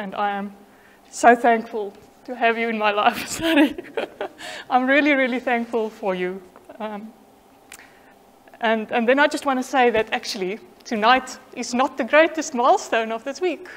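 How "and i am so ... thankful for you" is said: overcome, emotional voice catching, choking up. Thanking someone in a speech, emotional. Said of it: "I can clearly not even read emotional words without being emotional".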